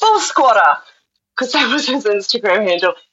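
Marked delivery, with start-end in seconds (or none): 0.0-0.8 put-on raised, high-pitched yell, calling out. Retelling calling out to a runner by his Instagram handle: retelling a yell. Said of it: "and I yelled".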